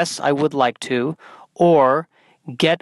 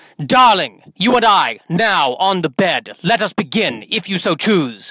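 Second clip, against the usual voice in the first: clumsy, stagey, slow, bad old-fashioned theatrical English accent; 3 semitones higher than usual. Show what you want to go up and say to her, in a bad Shakespearean accent. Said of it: "speak to her in a bad Shakespearean accent".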